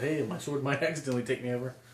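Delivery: ordinary delivery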